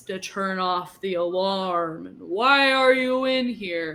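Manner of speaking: loud, dragged-out slow-motion voice, every word stretched. Narrating the mayor speaking during a slow-motion scene: slow-motion voice. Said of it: "in slow mo voice".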